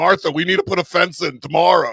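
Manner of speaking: exasperated, fed-up, had-enough tone. Continuing the neighbor bit, telling Martha about a fence: imitating Franklin's fed-up neighbor. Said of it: "It's like".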